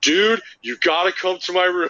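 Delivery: high, excited, urgent calling voice. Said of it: "He's like".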